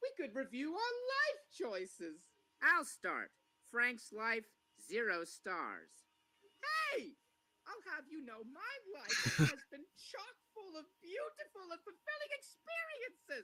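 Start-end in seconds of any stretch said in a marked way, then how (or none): 6.6-13.4 very high-pitched cartoon character voice. Answer a zero-star review of Frank's life with a Frank impression. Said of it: "I love his impressions from Mike and Frank".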